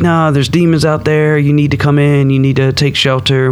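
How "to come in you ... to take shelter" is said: ordinary talk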